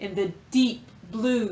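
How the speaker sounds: plain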